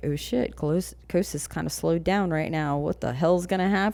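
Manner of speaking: ordinary talk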